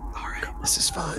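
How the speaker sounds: hushed voice. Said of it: "Why are we whispering?".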